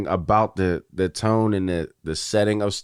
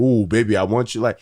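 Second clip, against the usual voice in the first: corny, put-on seductive, flirty tone; 2 semitones higher than usual. Mocking celebrities who shoot their shot online: imitating fake flirting. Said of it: "You don't have to do that fake shit like".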